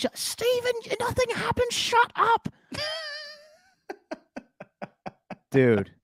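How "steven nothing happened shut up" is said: voice pitched very high. Acting out his mom's answer after he says he almost killed a baby, imitating his mom's voice. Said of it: "do it in her voice".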